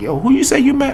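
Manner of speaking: high-pitched astonished voice.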